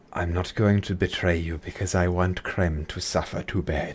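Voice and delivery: quiet seething anger kept under the surface. Narrating the game, the speaker gives Peregrine's reply, said quietly.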